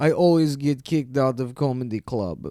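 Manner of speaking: put-on heavy Eastern European accent, like Russian or Polish. Retelling what a woman in a fur coat said, in a thick Russian or Polish accent. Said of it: "She had a thick accent".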